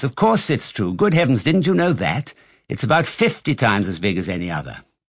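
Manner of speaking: ordinary delivery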